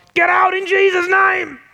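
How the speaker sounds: very high, loud, slow, drawn-out bellowed shout. Showing what not to say when responding in the flesh, shouting. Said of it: "Don't need to shout".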